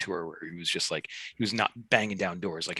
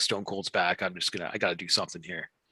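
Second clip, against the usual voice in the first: plain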